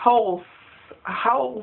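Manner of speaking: "out" said with an odd, unusual o vowel. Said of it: "Her accent only comes out with O's".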